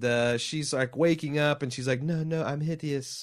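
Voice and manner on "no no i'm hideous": put-on French accent, pitched up. Retelling a woman waking up in a film: French accent. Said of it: "I gave it a French accent".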